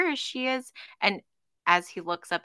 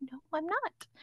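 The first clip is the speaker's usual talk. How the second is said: very quiet, softened, calm, gentle tone; 9 semitones higher, 12 dB quieter than usual. Retelling how he caught himself and replied, retelling a calmer, gentler voice. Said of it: "tries to like make his voice a bit calmer and more gentle".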